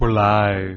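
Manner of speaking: loud, booming, announcing voice.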